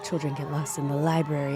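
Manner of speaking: soft, hushed, ASMR-style stage whisper. Retelling the opening scene of a dance production: imitating a half-whisper.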